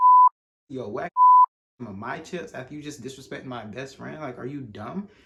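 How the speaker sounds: mock, very loud, rude, swooping disrespectful tone. Retelling what they said back to him in class, a mock-disrespectful retort. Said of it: "said it in a more disrespectful way".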